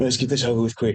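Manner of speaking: muttering under the breath. In a role-play, a character at the front of the ship speaks: muttered under breath. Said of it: "and I'm under my breath".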